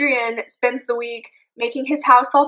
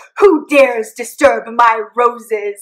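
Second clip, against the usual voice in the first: loud, slow, menacing, booming delivery; 5 dB louder than usual. Retelling a story, voicing Kyle as he bursts out of the greenhouse: imitating Kyle's scary voice. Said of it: "He's super scary".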